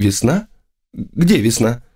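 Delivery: frightened, scared voice. Narrator reads a woman questioning the narrator, frightened. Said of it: "Она спросила испуганно".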